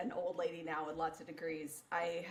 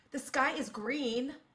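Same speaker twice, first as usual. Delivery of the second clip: slow, utterly and absolutely confident delivery; 7 semitones higher, 4 dB louder than usual. Speaker recalling how they'd state things without a rising question tone, retelling absolute confidence. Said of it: "I would say it like with just absolute confidence".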